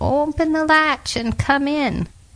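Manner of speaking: slow, very high, quavering voice. The wolf, lying in Grandma's bed, answers the little girl, imitating Grandma's quavering voice. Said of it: "Trying to imitate Grandma's quavering little voice".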